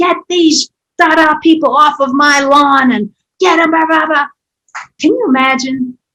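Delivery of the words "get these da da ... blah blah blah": mock, high-pitched, yelled screaming rant. Retelling a woman screaming out her door, imitating a woman screaming. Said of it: "screaming at the top of her lungs".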